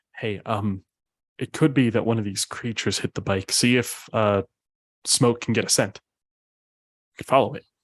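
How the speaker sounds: acted whispering. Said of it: "whisper in your ear".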